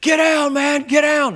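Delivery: very high, loud, excited hollering. Retelling how a man hollered a warning during gunfire: imitating someone hollering. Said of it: "he hollers at me".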